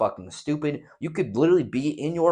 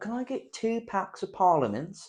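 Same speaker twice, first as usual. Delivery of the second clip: put-on clichéd British accent, pitched up; 8 semitones higher, 4 dB quieter than usual. Imitating a customer ordering cigarettes: imitating a cliche british accent. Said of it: "a very cliche British accent".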